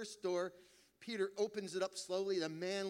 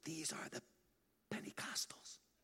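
hushed, soft, breathy whisper; 3 semitones lower, 8 dB quieter than usual. Telling a joke, voicing Peter showing a room in heaven: whispering. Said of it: "opening doors and whispering".

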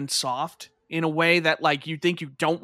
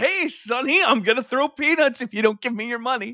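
pitched-up, bony skeleton mugger voice; 6 semitones higher than usual. Joking about a skeleton walking up to a kid: skeleton robbing a child. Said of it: "Just the skeleton walking up to a kid".

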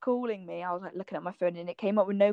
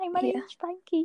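mock, very high, shy, timid little voice; 10 semitones higher than usual. Imitating a quiet friend meeting loud family: imitating Frankie timidly. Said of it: "you're really, like, timid".

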